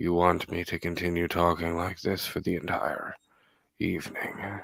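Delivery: deep ASMR-style voice. A host, joking with his co-host, speaks in a deep ASMR voice. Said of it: "That deep A S M R voice".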